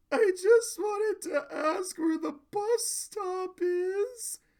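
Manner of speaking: high-pitched, slow sobbing voice.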